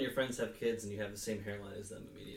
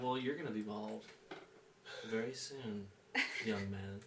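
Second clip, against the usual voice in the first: put-on creepy, ominous voice, quieter, faster; 5 dB quieter than usual. Retelling his reply to someone in the Navy who called him bald, mock-ominous creepy voice. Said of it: "Did you say it all ominous?".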